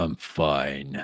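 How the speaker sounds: speaking low. Asked if he's all right, the character answers in a low voice. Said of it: "Low voice".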